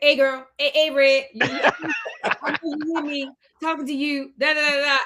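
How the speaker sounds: put-on very heavy New Orleans accent. Retelling how a boy kept calling out to her, in a very heavy New Orleans accent. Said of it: "very, very New Orleans accent".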